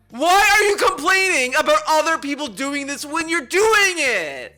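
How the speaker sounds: really mad, loud angry yelling. Speaking into the mic about a creator's hypocrisy over shorts, angry yelling. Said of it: "I'm yelling".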